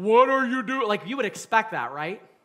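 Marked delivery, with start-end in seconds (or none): 0.0-0.9 very loud, booming, thunderous voice. Showing how God's voice might be expected to sound: booming thunderous voice. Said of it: "in this booming, thunderous".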